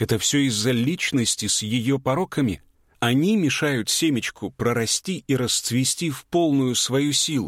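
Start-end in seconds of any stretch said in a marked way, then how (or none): none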